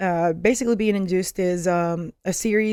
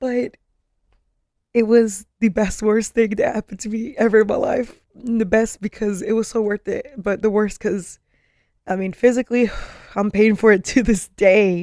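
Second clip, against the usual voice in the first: tearful, speaking through tears, crying; 3 semitones higher, 4 dB louder than usual. Reflecting on having created her baby inside her, crying. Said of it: "I'm actually crying right now".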